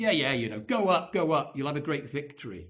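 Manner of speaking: acted-out sarcastic tone. Speaker retells a prophet's first answer to a king, retelling a sarcastic reply. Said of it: "he sarcastically at first says".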